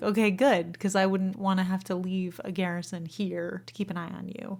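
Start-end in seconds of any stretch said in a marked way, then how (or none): none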